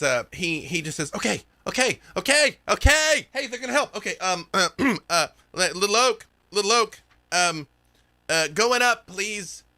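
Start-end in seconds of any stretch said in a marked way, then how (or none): 1.1-9.6 high-pitched, nervous, rattled character voice.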